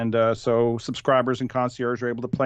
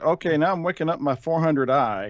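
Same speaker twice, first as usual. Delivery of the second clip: mock unemphatic, dead-straight deadpan delivery, no emphasis; 5 semitones higher than usual. Retelling a line from a previous segment, imitating a deadpan delivery. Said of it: "just deadpanned it".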